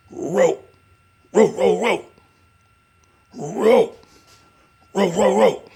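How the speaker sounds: very high, shrill, loud repeated dog barking. Showing how a dog's bark sounds, imitating a dog's bark. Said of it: "his bark it makes uh, it sounds like R O rope, just like that".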